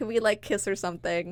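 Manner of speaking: normal talking voice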